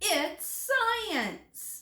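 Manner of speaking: exclamation. Reading a science passage aloud and marking its exclamation point, exclaiming. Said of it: "I see an exclamation mark".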